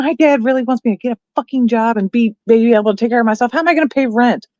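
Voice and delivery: put-on adamant, indignant complaining voice. Retelling a girl overheard complaining to her friend on the street, imitating adamant complaining. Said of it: "bitching to her friend, like, adamantly".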